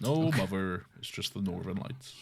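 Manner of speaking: put-on country-style character voice. Doing Steamed Hams impressions for a listener: Skinner impression. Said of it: "I thought you were doing like a country voice".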